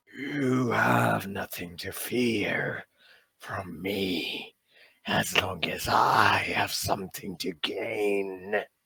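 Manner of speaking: slow, otherworldly ancient eldritch horror voice. In a tabletop game, the sky entity speaks to the players: giant eldritch horror voice. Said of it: "the giant eldritch horror in the sky is your second cousin. / The voice fades from your mind / The voice fades from your mind".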